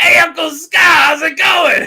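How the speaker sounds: shrill, piercing scream at full volume. Imagining Simba greeting Uncle Scar in The Lion King, go full Gilbert voice. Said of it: "just go full Gilbert".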